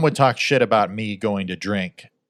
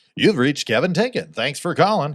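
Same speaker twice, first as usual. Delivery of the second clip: goofy, silly, pitched-up announcer-style voiceover; 5 semitones higher than usual. Recreating an old voicemail greeting: imitating a silly voiceover voice. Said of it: "like a silly, like, voiceover".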